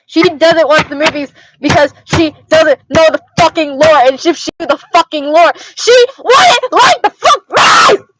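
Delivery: angry, worked-up rant, high and rising. Ranting about a sister who doesn't know the movies' lore, angry rant. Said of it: "I need to calm down".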